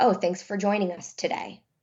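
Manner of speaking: usual speaking voice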